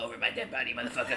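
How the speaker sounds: little gremlin character voice. Retelling how Joel was voiced refusing to give up a Krispy Kreme: Joel gremlin voice. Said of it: "That's the voice I gave him".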